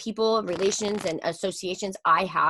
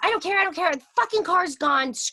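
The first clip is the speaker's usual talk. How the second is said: mock screaming, much higher pitch; 10 semitones higher than usual. Speaker retelling a woman's outburst on the phone, imitating someone screaming.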